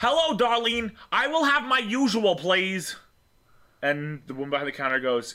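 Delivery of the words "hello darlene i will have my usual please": shrieking, very high-pitched screaming. Torin walks up to the counter and orders from Darlene: Torin screaming his order. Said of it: "you don't have to scream".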